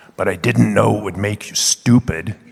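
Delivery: grumbled, growled, growling delivery. Narrator recounts what he said to them about racing, retelling a soft growl. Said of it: "he growls at me softly".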